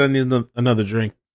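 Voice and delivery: ordinary talk, nothing marked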